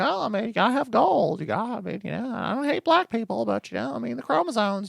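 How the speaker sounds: put-on high, cracked, creaky voice of a crazed old man. Imitating an honorable crackpot dad: imitating an insane old crackpot. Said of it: "an insane old man who's sorta like".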